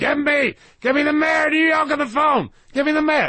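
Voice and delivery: very high-pitched, shrill, screaming bad-villain voice. Retelling waiting outside an office while he screamed on the phone: imitating Trump screaming. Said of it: "he was screaming so loudly".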